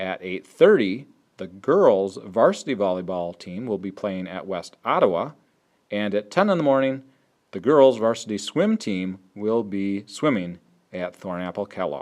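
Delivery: slow, careful read-through. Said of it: "I'm gonna say it nice and slowly".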